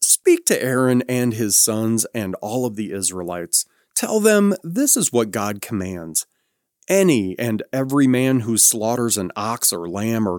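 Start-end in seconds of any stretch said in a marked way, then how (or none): none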